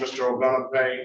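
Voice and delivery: ordinary delivery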